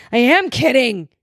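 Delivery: full-on high-pitched shout into the mic. Repeating the other speaker's words back into the mic: yelling. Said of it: "Don't yell in the mic".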